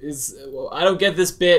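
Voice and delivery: high, loud, confused, baffled voice.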